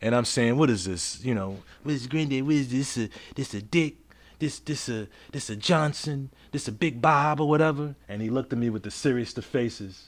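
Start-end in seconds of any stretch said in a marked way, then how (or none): 0.6-8.0 playful, silly, goofy teasing tone, acted out. Retelling joking with granddad at the urinal: retelling own goofy joking. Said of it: "I'm just joking around, being goofy".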